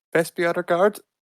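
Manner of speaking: very high-pitched, strained-up register. Showing how he said the line, in a very high-pitched voice. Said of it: "in a very high pitched sound".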